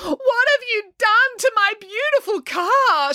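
very high crying out. Narrator reads a story, voicing Daisy's mother confronting Finn, crying out. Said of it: "She cried".

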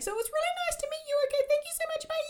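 very high, rushed voice, all control lost. Retelling leaping on a date to say goodbye: imitating losing control of voice. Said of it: "I lose all control of my voice as I say".

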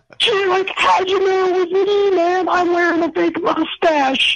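very high-pitched cartoon-style voice. Calling in to greet the hosts, asked how they knew: Shaggy voice. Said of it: "it's going great, Shaggy".

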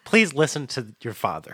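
loud, swooping, calling voice. Imagining a voice on a mountain telling children to listen: imitating a loud voice. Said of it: "loud, loud voice can be like".

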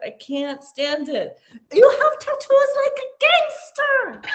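put-on very high, swooping, sing-song elderly woman voice, Korean accent. Speaker retells what their almost-90 mother said to them; imitating old korean mother. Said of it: "my mom's like this little 90-year-old Korean lady".

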